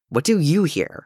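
wary, suspicious tone. A brother questions Tim, asking suspiciously. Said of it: "he asked suspiciously".

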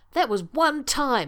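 high, drawn-out protest. A colonel answers a companion's teasing jibe, protesting. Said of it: "Shepard protested".

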